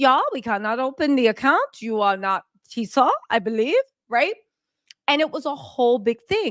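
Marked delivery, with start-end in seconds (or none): 0.0-4.4 put-on Swiss accent. Acting out the Swiss bank's answer: Swiss accent. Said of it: "this is my Swiss accent".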